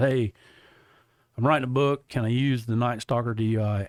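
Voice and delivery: ordinary talk, nothing marked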